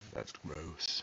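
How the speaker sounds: put-on, hushed, very quiet, patronizing condescending tone. Mimicking someone's reaction to how he does things, mock-condescending.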